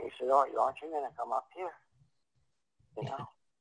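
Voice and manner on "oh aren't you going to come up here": voice on the verge of tears, nearly crying. Retelling a phone call where the caller begged them to come: imitating Michael almost crying. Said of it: "he was almost crying".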